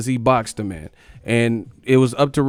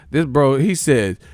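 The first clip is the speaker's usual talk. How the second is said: usual speaking voice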